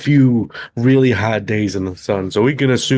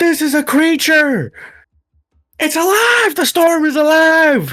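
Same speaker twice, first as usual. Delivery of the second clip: shrill, very high-pitched yelling. A player's character reacts as the storm around the party grows, yelling out. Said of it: "I yell out".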